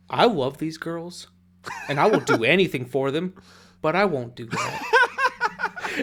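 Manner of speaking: slow, swooping, drawn-out delivery full of conviction. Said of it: "he says it with such conviction".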